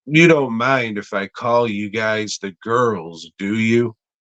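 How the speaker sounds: normal talking voice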